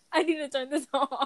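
high voice, words broken up by laughter. Apologizing after being cracked up by someone, laughing while talking. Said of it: "Chase is cracking me the fuck up".

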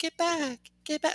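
very high-pitched, polite, pleading voice. Retelling a client's first hesitant words in a session: imitating a polite plea. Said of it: "she's trying to be all polite".

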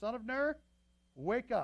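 slow, loud, drawn-out shout. A man on a hill shouts down to soldiers in a camp; shouting down. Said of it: "he shouted down to the soldiers".

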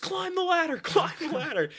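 put-on, shrill, very high-pitched shouted scream. Recounting being chased by the tyrant, the speaker re-enacts a teammate: retelling a scream. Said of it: "Zach screams".

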